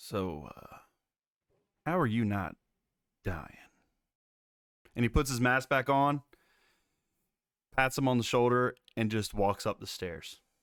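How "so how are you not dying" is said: whispered close, in character. Voicing a character leaning into another's ear: whispering in character. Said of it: "leans into his ear and whispers".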